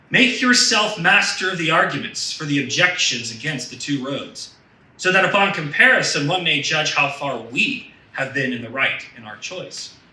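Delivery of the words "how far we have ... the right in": the word we singled out, heavy stress. Reading aloud a quoted written postscript, stress on we. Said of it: "why did I emphasize the word we?".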